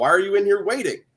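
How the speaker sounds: mock, high-pitched, hollering yell. Retelling being scolded in the principal's office: imitating Mister Live yelling. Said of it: "he's yelling at me, like".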